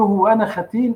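ordinary talk

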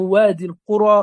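ordinary delivery

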